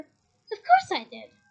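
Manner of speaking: strangely high-pitched voice, very slow and drawn out. Reading a story aloud, voicing Hermione as a boy asks her something: strangely high-pitched voice. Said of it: "said Hermione in a strangely high-pitched voice".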